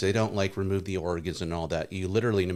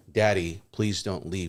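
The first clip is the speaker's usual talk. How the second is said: put-on crying, tearful tone. Retelling a wife's words at her father's coffin: imitating a crying plea. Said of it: "she's pleading for him".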